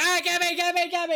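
very high screaming call. Retelling players calling to a game monster: imitating screaming. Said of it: "we'd just be screaming out like".

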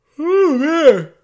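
talking through a yawn. Reacting to the other speaker, yawning while talking. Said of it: "Sorry, I'm just yawning here".

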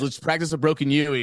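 plain

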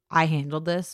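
normal talking voice

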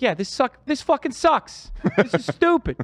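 clipped, high-pitched Boston speech. Imitating a comedian's blunt style of complaining: Bill Burr impression. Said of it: "That's a good impression".

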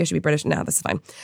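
normal talking voice

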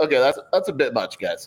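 ordinary talk, nothing marked

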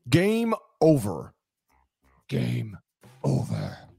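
put-on arcade video game announcer voice. Asked to make a video game's game-over sound, video game 'game over' voice. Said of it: "can I get your game over?".

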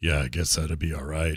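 low, put-on American accent. Teasing that someone said a line in Witcher voice. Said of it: "You said it in Witcher voice".

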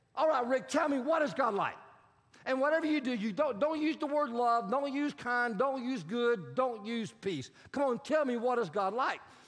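acted intense, passionate, pressing delivery. Retelling how a man demanded an answer: retelling a passionate demand. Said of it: "he says with passion".

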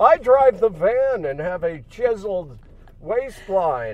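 loud, swooping, sing-song, snooty rich-man voice. Doing Fred for the others: Fred voice, like Thurston Howell III. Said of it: "you're kind of talking like Thurston Howell the Third".

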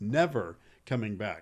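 never leaned on hard.

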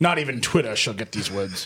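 lofty, aristocratic, haughty baron voice. Joking about not tweeting something, talking like a haughty baron. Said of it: "like a like a haughty baron".

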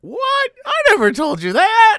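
very high, very loud, swooping, upset shriek. Retelling how a father reacted when reminded of a story: imitating a high-pitched shriek. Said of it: "he gets very high pitched".

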